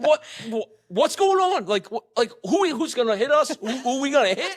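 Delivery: very high, loud, flustered, panicked stammer. Retelling being startled by a scream while driving: retelling own panicked reaction. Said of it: "and I'm like".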